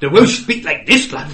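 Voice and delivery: put-on Scottish accent. Retelling how another person did Welsh in a Scottish accent: Scottish accent. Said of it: "he went Scottish".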